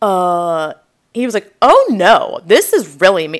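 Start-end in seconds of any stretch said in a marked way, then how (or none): 1.6-3.4 mock-proud man voice, louder. Speaker retells how a man answered, imitating him sounding proud. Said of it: "like so proud".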